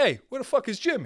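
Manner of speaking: mock high Italian accent. Imagining LeBron James as Italian, calling out on court, Italian LeBron James voice. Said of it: "LeBron's Italian".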